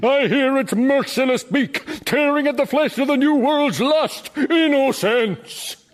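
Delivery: very high, grand, grandiose declaiming bellow. In a drama, a character holds forth, then asks a listener's opinion: bellowing. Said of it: "what was all that stuff you were bellowing".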